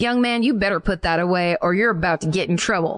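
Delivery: put-on stern, scolding tone. Retelling how a grandmother scolded a gunman: imitating a scolding grandmother. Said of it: "points her finger at him and says".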